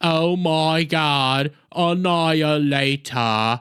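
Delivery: low, very slow, drawn-out flat monotone. Imitating how a supervillain character constantly talked: Dobbin voice, flat monotone. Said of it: "who constantly talked like this. ... Very monotone, very annoying".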